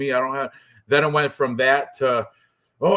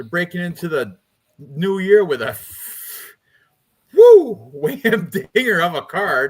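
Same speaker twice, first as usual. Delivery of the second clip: loud, swooping tone with a touch of sarcasm; 4 semitones higher, 5 dB louder than usual. Introducing the first event of the new year: slightly sarcastic tone. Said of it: "a little sarcasm in my voice".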